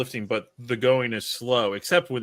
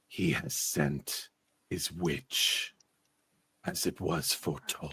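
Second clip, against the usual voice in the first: very slow, whispered, rumbling voice; 7 semitones lower, 8 dB quieter than usual. Voicing a being inside a barrow that greets the party: rumbling voice. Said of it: "A rumbling voice coming from inside the barrow".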